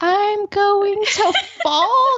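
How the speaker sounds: very high, slow, drawn-out, hesitant, timid voice. Retelling how the class repeated the instructor's line: imitating timid delivery. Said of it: "everyone says it so timidly".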